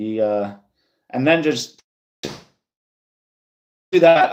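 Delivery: halting stutter, tripping over words, very slow. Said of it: "I'm stuttering".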